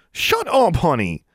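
sharp snapped delivery, pitched very high. A woman answers a mocking Jarvie, snapped again. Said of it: "Angelique snapped again".

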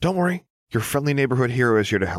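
calm, tender, gentle, kind soothing tone. Picking up a trembling lost girl, a hero reassures her gently. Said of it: "gently saying".

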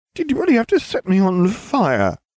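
very high-pitched, groaning voice. Narrator reads Ron, curled against the door after being set on fire, groaning. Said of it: "He groaned".

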